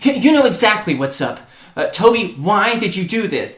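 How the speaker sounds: frustrated, fed-up tone. Retelling how one person confronted another, acting out frustration. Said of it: "frustrated and says".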